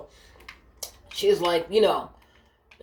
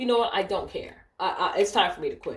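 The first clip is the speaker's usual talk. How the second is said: plain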